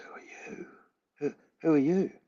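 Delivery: breathy, barely voiced whisper. Retelling what a tearful stranger asked: imitating a whisper. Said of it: "in this whisper".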